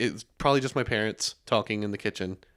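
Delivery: normal talking voice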